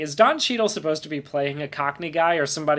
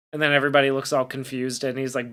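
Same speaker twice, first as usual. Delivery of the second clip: usual speaking voice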